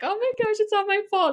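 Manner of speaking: mock tearful crying, voice pitched way up high. Retelling own reaction to patients canceling appointments: retelling own crying. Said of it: "just crying".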